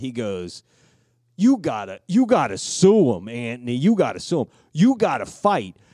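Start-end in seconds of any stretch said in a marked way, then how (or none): 1.4-5.7 put-on Italian-American accent, higher, louder. Retelling a man urging someone to sue, exaggerated Italian-American accent. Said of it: "acting more Italian than Tony Soprano".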